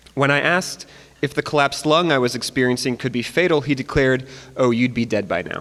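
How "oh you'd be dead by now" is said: mock deadpan delivery, pitched lower. Retelling what the ER doctor declared about a fatal lung: imitating deadpan delivery. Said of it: "was a real deadpan kind of guy".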